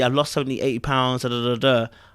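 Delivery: ordinary delivery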